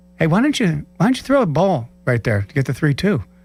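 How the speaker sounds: real calm, easy, relaxed tone. Retelling what a calm teammate said in the dugout: imitating Greg Maddux's calm voice. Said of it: "real calm, calm voice goes".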